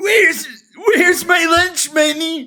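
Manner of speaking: put-on very high, puberty-cracked teen bully voice. Guessing how a cartoon bully sounds: voice of a bully going through puberty. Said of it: "you gotta give him that kind of puberty".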